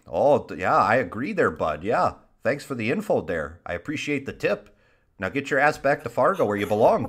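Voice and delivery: put-on Canadian-sounding Midwestern accent. Speaker riffing in a joke bit with others, Midwestern accent that sounds Canadian. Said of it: "Why do you sound Canadian?".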